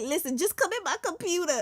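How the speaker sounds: high, fed-up, impatient, exasperated voice. Retelling own words to an i t guy: retelling an annoyed reply. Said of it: "I was just, like, so annoyed".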